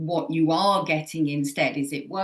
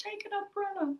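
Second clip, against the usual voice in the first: very soft, very high, tiny half-whisper; 11 dB quieter than usual. Voicing one's intuition as a small inner voice, in a little half-whisper. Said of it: "this little whisper at the bottom right of my head going".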